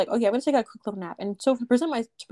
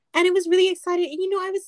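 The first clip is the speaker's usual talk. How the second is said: shrill, loud, high-pitched, excited chattering voice; 10 semitones higher, 4 dB louder than usual. Speaker imitates how they used to talk back in the day, loud high-pitched voice. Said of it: "I talk kind of like this".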